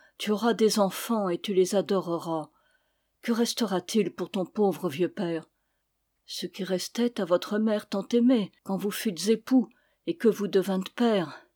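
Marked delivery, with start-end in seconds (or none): none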